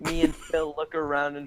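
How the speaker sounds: ordinary delivery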